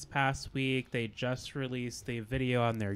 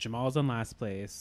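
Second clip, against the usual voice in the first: play-acted, confident, emphatic, full conviction. Retelling how another speaker announced the last place, imitating someone saying it with conviction. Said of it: "You said that with, like, conviction".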